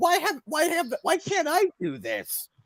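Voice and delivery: very high, shrill, high-pitched scream. Joking about the leader watching the border, imitating Kim screaming. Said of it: "he's just screaming".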